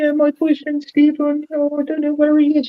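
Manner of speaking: play-acted very high, upset, tearful crying voice. Retelling a filmed woman who lost her boyfriend outside a club; imitating her crying. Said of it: "She's sort of really upset, crying".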